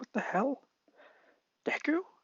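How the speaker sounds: very high, stunned outburst blurted out in shock. Retelling a scene where he is hit by electricity: mock-shocked Bakugo voice. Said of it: "Bakugo's just shocked".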